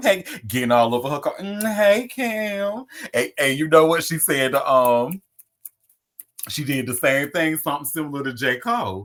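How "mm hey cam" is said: very high-pitched call with the name drawn out. Showing how Nia Long greeted Cam: imitating Nia Long. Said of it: "You see how she did that?".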